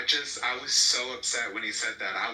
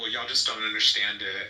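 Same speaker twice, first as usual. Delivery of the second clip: mock smirking, smug laugh; 3 dB louder than usual. Mocking how they dismissed the conversation, the speaker does a mock smirking laugh. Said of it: "smirk and laugh and be like".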